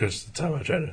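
high voice cracking on its own. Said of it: "there we go".

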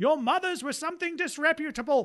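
very high, shrill scream. Voicing a character taunting gnolls from a catapult: screaming insult in character. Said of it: "screams out".

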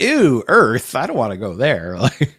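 put-on disgusted voice. Describing a daughter born on the moon, the speaker imitates her disgust at Earth. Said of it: "She's like".

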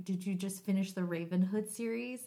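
ordinary talk, nothing marked

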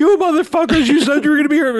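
mock very high, rushed, furious yelling. Retelling a man getting on the phone, imitating him angry. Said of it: "he gets on the phone all angry".

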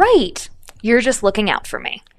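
sassy attitude. Reading a scene aloud in the part of Caroline: sassy. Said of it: "Make sure to be sassy".

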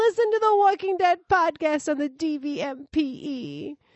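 whiny, very high-pitched voice. Ask the audience to listen to the walking dead podcast, sounding kind of whiny. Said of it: "That's kind of whiny".

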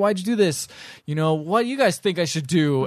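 put-on yelling. Retelling how he yelled at the camera: imitating someone yelling. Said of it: "he starts yelling at the camera".

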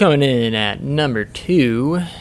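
presenter-style announcer voice. Ranking players of the week and announcing the next pick, in announcer voice. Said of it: "Don't know why I went into announcer voice right there".

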